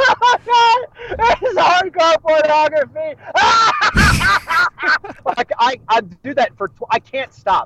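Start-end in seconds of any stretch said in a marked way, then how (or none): 0.0-3.2 slow, high hysterical laughing. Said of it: "disrupting the place laughing and just going".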